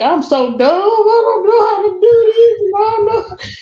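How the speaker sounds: mock crying, very high and tearful. Retelling being stuck on computer changes: retelling own crying. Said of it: "I was sitting crying, like".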